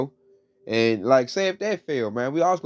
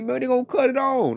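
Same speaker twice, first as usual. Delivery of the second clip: panicky, pleading voice; 11 semitones higher than usual. Retelling how Jake came to him at work today; imitating Jake panicking.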